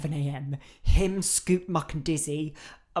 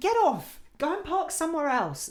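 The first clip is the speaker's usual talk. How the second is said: put-on furious, shrill, very high-pitched angry outburst; 11 semitones higher than usual. Complaining about neighbours blocking the drop curb: imitating own angry outburst. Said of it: "I just get really angry".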